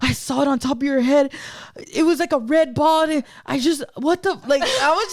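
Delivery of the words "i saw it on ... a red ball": panicked, spooked, thoroughly freaked-out male voice. Retelling a man who saw a red orb: imitating someone freaking out. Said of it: "freaking out".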